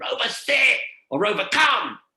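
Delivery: shrill, very high, loud scream. Explaining dog training, showing an owner screaming at a runaway dog; screaming a command. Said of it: "And you scream".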